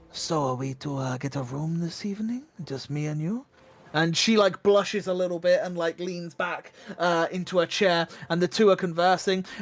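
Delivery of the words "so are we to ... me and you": soft, hushed half-whispered aside. Voicing a tavern patron asking a partner about getting a room: half-whispering. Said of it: "whisper to the other".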